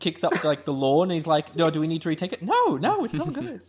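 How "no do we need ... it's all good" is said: high sing-song voice with pitch swinging widely. Retelling a film scene of a director on set: Johnny Depp impersonation. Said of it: "That was a very good Johnny Depp impersonation".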